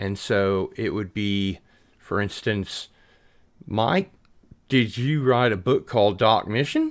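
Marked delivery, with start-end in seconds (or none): 3.7-6.9 Australian accent, swooping and rising at the end. Explaining Australians ending statements like questions: Australian accent, rising at end. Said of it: "a statement like a question that goes up like a question at the end".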